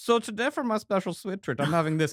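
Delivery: put-on chirpy presenter-style German accent. Describing a guy on TikTok, speaker imitates him in a German accent. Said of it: "a guy on TikTok who does like a German accent".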